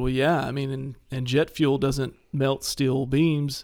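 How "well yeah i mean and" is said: ordinary delivery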